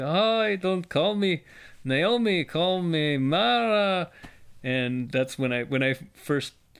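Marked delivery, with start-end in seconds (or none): 0.0-4.1 put-on high, very slow old matchmaker voice. Showing how a passage sounds read aloud: old matchmaker voice. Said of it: "I've said it in the voice of the, the old matchmaker".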